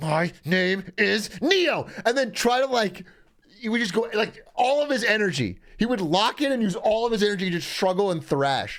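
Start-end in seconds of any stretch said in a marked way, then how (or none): 0.0-1.9 gritted-teeth delivery through clenched teeth, higher. Retelling how a pinned brother tried to escape a headlock: imitating a gritted-teeth line. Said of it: "grit his teeth and then get really in the zone".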